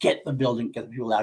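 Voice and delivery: ordinary talk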